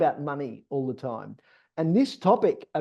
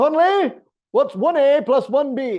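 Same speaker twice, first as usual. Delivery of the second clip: put-on Scottish accent, higher and louder; 10 semitones higher, 8 dB louder than usual. Retelling a Billy Connolly joke about a teacher: imitating a Scottish accent. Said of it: "I shouldn't do a Scottish accent".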